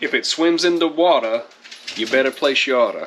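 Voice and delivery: put-on Louisiana Cajun accent. Quoting the slogan on a product logo: put-on Cajun accent. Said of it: "to use my Cajun accent".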